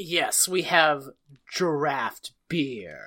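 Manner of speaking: haughty, disdainful, low, slow snooty drawl. Retelling a waiter's reply to a beer order: imitating a disdainful snooty waiter. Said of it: "he puts some stank on it".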